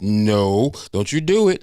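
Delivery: protesting, objecting tone. Imitating another viewer who objects: imitating Patricia. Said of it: "Patricia be like".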